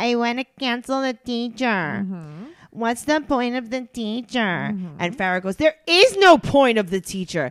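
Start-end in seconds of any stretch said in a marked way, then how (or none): 0.0-4.4 put-on childish baby talk voice. Retelling what a nine-year-old said from the back seat: imitating Sophia's baby voice. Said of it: "Sophia goes in a baby voice".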